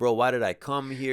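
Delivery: ordinary delivery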